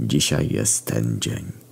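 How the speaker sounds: slow murmured whisper.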